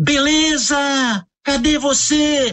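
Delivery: high-pitched shout, calling out.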